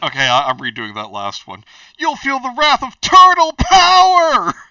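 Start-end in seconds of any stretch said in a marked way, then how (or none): 2.0-4.5 shrill, very high, loud shout, "power" drawn out. Redoing the last line in the requested Sam Clock voice. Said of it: "a Sam Clock, Clock voice".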